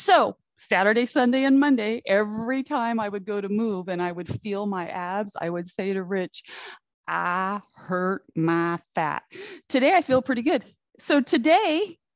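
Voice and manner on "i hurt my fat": put-on drawling Southern accent, slower. Retelling a line the speaker kept repeating for days, in a Southern drawl. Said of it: "in a Southern drawl".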